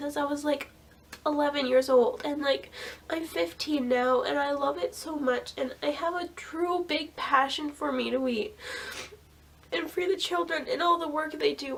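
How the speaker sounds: wet, tearful voice, crying through the words. A fifteen-year-old speaking on video, crying while talking. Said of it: "I'm sorry I'm crying so much".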